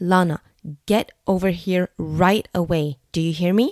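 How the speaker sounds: very strict, firm, stern, no-nonsense tone. Parent telling their daughter on the playground to come here, very strict. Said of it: "tell my daughter in a very strict way".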